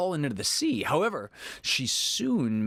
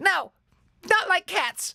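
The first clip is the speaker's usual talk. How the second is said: shrill, very high, impassioned mouse squeal; 5 dB louder than usual. Narrating, the mouse answers Alice's apology in a shrill, passionate voice. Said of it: "cried the mouse in a shrill, passionate voice".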